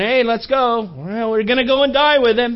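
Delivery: very sarcastic, begrudging, grudging tone. Retelling a disciple's line about going to die with him: imitating a very sarcastic remark. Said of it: "I think that that was very sarcastic".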